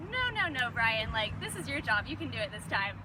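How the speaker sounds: normal talking voice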